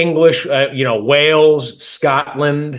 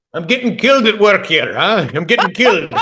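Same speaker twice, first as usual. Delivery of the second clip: Irish brogue, higher pitch; 5 semitones higher than usual. Bantering with a buddy over a Guinness, doing an Irish accent. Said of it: "it's been a while since I've done an Irish accent".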